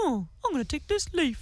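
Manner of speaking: dog character voice. Telling a story about a dog, the speaker voices the dog: dog voice. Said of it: "great dog impersonation too".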